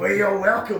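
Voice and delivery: put-on little old jazz-cat accent. Imitating how the voice says you're welcome: old jazz accent. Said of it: "like a little old, old jazz accent".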